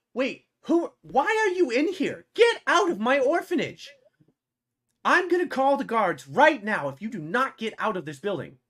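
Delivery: very high, very loud, angry screaming shriek. Voicing a woman who wakes up and screams at intruders: NPC screaming at intruders. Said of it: "she starts screaming".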